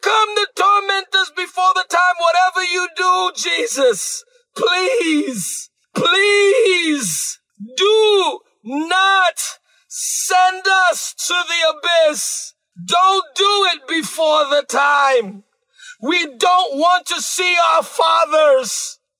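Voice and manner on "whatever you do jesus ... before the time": put-on desperate pleading, much slower. Retelling how they begged Jesus; acting out desperate begging. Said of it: "They begged him and said".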